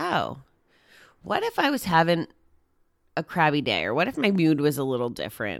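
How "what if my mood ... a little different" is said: ordinary talk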